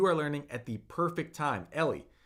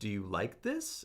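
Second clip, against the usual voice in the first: rising, question-like pitch on the word this; 6 semitones lower, 7 dB quieter than usual. Showing how inflecting the voice up asks a question: rise on this. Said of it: "I can inflect my voice up and ask a question like".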